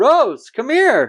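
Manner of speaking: loud shouted call. Retelling how the hundred-year-old dad calls out from the doorway, retelling a shout. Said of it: "he just shouts".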